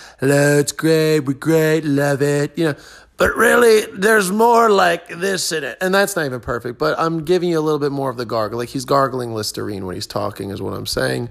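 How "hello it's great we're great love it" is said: exaggerated, slow, heavily leaned-into delivery. Showing how other people did Trump impressions: exaggerated Trump impression. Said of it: "They're like".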